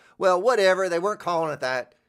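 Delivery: loud, high-pitched yell. Speaker arguing with an imagined well-actually person, yelling. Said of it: "Sorry, I'm yelling it".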